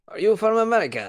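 put-on Russian accent. Retelling a one-eyed stranger asking him a question, in a Russian accent. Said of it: "he had a Russian accent and he was like".

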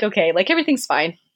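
plain

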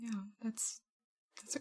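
very quiet voice catching with emotion. Responding to another speaker calling it really cool, getting a little choked up.

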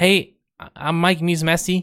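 nerdy voice, pitched high. Describing a jiu-jitsu practitioner to listeners, doing a nerdy Mikey Musumeci impression. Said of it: "he sounds like a nerd too. ... But he sounds like this".

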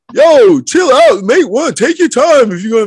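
very high-pitched, loud voice. Retelling what teammates said at a practice drill: imitating Kobe Harris. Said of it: "that's the voice that you were imitating".

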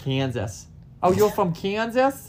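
put-on Boston accent. Trying to say Kansas with a Boston accent: Boston accent. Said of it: "I'm trying to say Kansas with a Boston accent".

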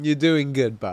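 sarcastic, mock-approving tone. Acting out what to say to a slow driver when overtaking: acting out sarcastic praise. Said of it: "a sarcastic".

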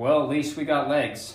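put-on somber tone. Retelling what Jeremy said on a ride, retelling a somber remark. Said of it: "in a somber voice says".

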